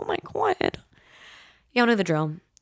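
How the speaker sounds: soft, choked-up voice catching, swooping pitch. Host signing off a podcast episode to listeners, choked up. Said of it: "Am I getting choked up right now?".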